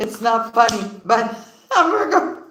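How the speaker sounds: words broken up by laughter. Reading cards and apologizing for laughing: laughing while talking. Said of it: "I'm sorry, I'm laughing".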